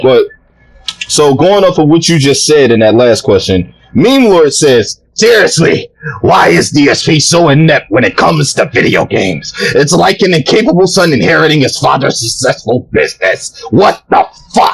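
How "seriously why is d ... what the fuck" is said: angry, ranting put-on voice. Reading out what someone wrote, in an angry put-on voice. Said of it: "read in my angry Adon voice".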